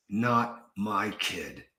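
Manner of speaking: tight, strained speech through gritted teeth. Showing how the same words sound said through gritted teeth like Clint Eastwood. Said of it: "gritted your teeth while you said it".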